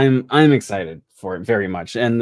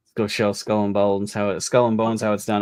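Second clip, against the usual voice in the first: ordinary talk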